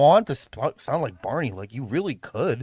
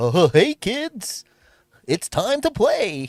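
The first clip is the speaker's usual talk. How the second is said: put-on very slow, drawn-out kids-show host voice; 7 semitones higher, 4 dB louder than usual. A streamer reacting to being told they sound like Barney, Barney the Dinosaur voice. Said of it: "Someone said I sound like Barney".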